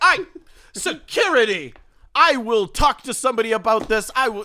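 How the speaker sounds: loud, slow, furious, enraged delivery. Voicing a woman whose luggage was kicked: enraged woman. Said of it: "she huffs off in a rage".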